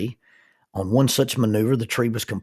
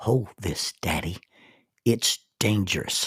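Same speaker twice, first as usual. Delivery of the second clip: soft, little, small whispered voice; 2 semitones lower, 4 dB quieter than usual. A father retelling his daughter's words during his prayer: little whispered voice. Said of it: "this little whispered voice says".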